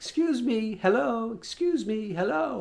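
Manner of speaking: put-on high, small, elderly little old lady voice. Retelling an old lady calling to him as he walked to his truck, little old lady voice. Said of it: "I hear this little voice say".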